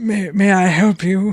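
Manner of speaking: put-on slow, puzzled, stammering old man voice. Voicing an old man opening the door to unexpected guests: confused old man. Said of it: "a little confused".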